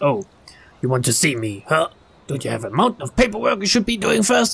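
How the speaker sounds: gruff, rough voice. Reading Shizuo's reply on the phone: gruff voice. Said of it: "The gruff voice was Shi-, Shizuo's".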